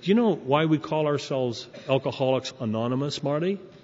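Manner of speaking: ordinary delivery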